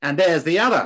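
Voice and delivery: put-on easygoing Australian accent. Speaker retells a man's remark about their twin mother, in an Australian accent. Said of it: "in a lovely Australian accent".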